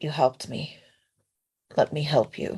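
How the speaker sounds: soft, gentle, hushed whisper, very close. Voicing a character who wraps her arms around another: whispering. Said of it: "she's just gonna whisper to him".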